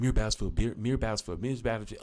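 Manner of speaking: fast repeated tongue twister.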